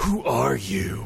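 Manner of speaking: rough, creaky, raspy masked-vigilante growl. Host introducing the episode being discussed; best Batman voice. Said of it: "I do that with my best Batman voice".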